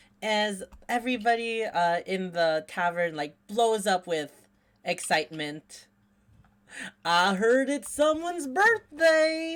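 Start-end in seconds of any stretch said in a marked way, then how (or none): 7.0-9.6 goofy, rowdy, boisterous, very high voice. Voicing a character as everyone in the tavern erupts: goofy, boisterous voice. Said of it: "a goofy, funny, bolsterous voice".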